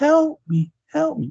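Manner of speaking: put-on very high, tiny childlike voice, pleading tone. Imitating a scary movie moment: Betsy Palmer's kid voice. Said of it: "in a kid's voice".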